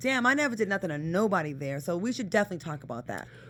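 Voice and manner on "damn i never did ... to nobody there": ordinary talk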